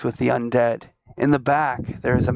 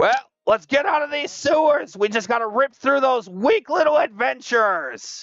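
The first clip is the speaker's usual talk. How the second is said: goblin chief voice, pitched way up high; 12 semitones higher than usual. Game master voicing the boss goblin addressing the players: boss goblin voice. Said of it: "The goblin says".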